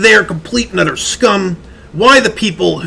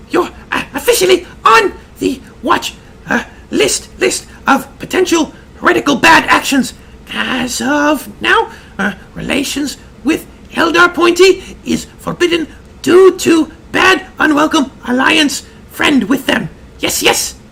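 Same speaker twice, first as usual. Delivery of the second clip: silly, squeaky, pitched-up comic put-on voice; 8 semitones higher than usual. Asked to reread an Inquisitor's notice, in the squeaky funny voice. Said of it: "put on that squeaky funny voice you do".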